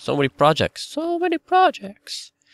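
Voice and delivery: very high, squeaky, swooping, sing-song silly voice. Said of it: "I was talking a really high-pitched voice".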